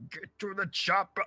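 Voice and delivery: put-on voice, pushed very high and strained. Doing an Arnold impression when put on the spot: Arnold impression. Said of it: "what's your best Arnold impression?".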